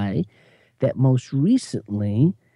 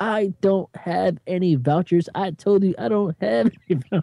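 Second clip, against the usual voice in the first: pitched-up, angry, scolding telling-off; 7 semitones higher than usual. Retelling how a man answered a woman asking for a voucher, retelling chewing her out. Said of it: "He starts to chew her".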